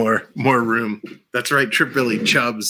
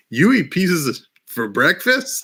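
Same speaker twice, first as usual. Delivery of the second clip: put-on nonchalant, casual voice, higher; 5 semitones higher than usual. Quoting a favorite movie line: imitating Happy Gilmore's nonchalant, casual delivery. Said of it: "he says it so nonchalantly and casually".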